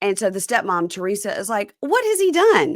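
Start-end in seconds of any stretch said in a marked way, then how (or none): 1.8-2.8 high-pitched, loud, raised voice. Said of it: "raising her voice".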